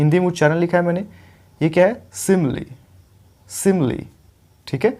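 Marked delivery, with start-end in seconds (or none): 2.1-4.1 simile with SI stressed, said slow and clear. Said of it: "पहले वाले syllable पे stress है".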